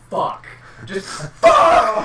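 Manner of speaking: very high, loud, shrieking scream. Recounting being left alone in the house, retelling a scream. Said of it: "just screamed".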